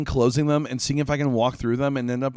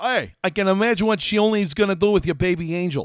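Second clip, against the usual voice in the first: put-on, pitched-up New York accent; 6 semitones higher than usual. Reading out Bill's message in a put-on New York accent. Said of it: "I'm gonna give Bill the voice".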